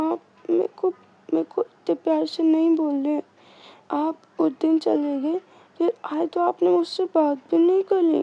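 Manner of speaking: put-on weepy, sobbing, crying little-girl voice. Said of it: "ऐसे रोते हुए बोलती है".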